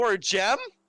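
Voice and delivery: high, loud, indignant disbelief.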